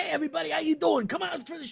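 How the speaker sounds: put-on New York accent. Quoting a charismatic show host's greeting in a new york guy accent. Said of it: "he's got this like kind of New York guy kind of accent".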